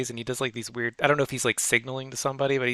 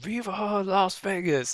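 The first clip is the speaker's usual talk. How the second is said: play-acted wild, high-pitched screaming shout; 7 semitones higher than usual. Retelling a post-game clip of a player: imitating someone screaming. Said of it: "screaming it".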